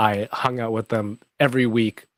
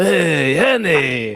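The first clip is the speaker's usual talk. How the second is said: rough, gravel-edged put-on character voice; 4 semitones higher, 4 dB louder than usual. Showing the gravelly voices done last week: Watto voice. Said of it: "Watto is like".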